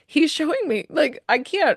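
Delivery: on the verge of tears. Told how much her dad loves her, choked up and near tears. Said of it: "You're making me cry. I'm sorry".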